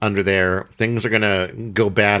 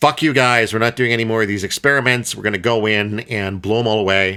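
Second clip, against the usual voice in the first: ordinary delivery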